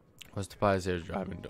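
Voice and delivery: voice breaking and cracking. Reading player ratings while just waking up, voice cracking. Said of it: "Bad voice crack".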